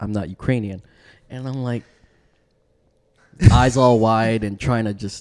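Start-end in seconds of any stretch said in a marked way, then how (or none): 0.0-0.8 put-on disdainful tone, quieter. Speaker retelling what a man said to them, mock-disdainful. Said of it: "Looked at me with such disdain in his eyes".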